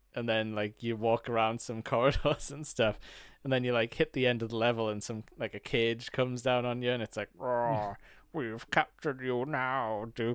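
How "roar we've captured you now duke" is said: slow, stupid-sounding, silly put-on villain alien voice. Describing a video game level where aliens capture the player, in a stupid alien voice. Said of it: "Like a stupid voice comes over".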